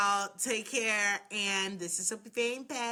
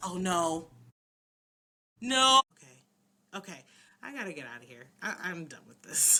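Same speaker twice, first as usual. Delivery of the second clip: mock-sleepy voice of a woman; 3 semitones lower than usual. Retelling how Rebecca reacts when Elizabeth does nothing, imitating Rebecca's sleepy voice. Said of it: "pulls out her sleepy voice".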